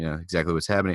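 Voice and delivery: normal talking voice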